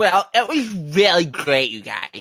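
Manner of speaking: slow put-on voice with stretched-out words. Answering how the week went, doing a Deceiver impression. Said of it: "I was gonna do my Deceiver impression".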